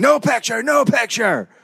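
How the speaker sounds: very high, rough, shouted voice. Telling a story about Trump and Tyson, the speaker is imitating Akio yelling. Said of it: "Akio starts yelling".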